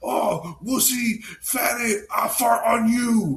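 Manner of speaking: very high, drawn-out, stretched taunting tone. Retelling how Mister Satan taunts Boo before he comes out: imitating Mister Satan taunting. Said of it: "he's taunting him".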